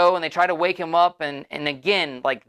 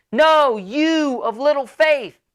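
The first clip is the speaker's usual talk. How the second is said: put-on very slow, high, drawn-out loud shout; 9 semitones higher, 4 dB louder than usual. Retelling the storm story, Jesus repeating himself: imitating yelling over a storm. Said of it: "he's yelling 'cause it's loud".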